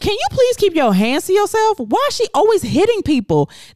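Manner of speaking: high, mock scolding voice.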